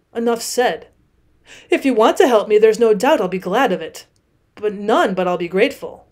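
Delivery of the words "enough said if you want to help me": ordinary delivery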